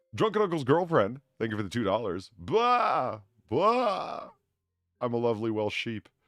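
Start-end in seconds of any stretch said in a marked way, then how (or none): 2.4-4.3 very slow, drawn-out cartoon vampire voice. Performing a scripted sheep line, a reader uses a cartoon Dracula voice. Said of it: "you decided to sound like a cartoon version of Dracula".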